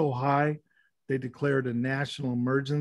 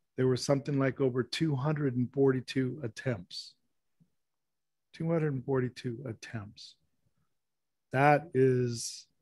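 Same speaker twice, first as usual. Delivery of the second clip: choked up, voice breaking and catching with emotion. Speaker giving an example about kids in a reservation area, choked up. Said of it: "I get choked up".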